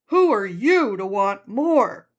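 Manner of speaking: funny, loud, nagging little voice. Voicing the listener's inner critic, in an inner critic voice. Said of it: "Hope you appreciate my little voice there".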